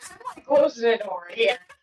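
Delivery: ordinary talk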